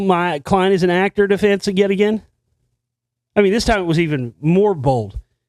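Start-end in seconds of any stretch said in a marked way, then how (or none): none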